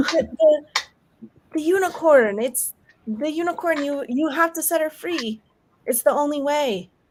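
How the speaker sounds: high, tearful, sobbing, begging voice. Voicing a game character who starts crying: crying plea. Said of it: "she starts crying".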